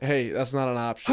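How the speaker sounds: normal talking voice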